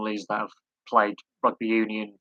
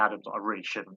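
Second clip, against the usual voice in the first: normal talking voice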